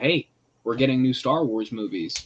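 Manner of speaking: ordinary delivery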